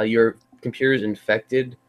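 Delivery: normal talking voice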